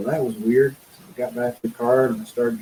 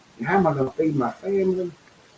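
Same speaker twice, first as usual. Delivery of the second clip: mock exasperated, high, angry outcry; 5 semitones higher than usual. Retelling walking around the yard yelling at God: retelling yelling at God. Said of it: "walking around the yard yelling at God".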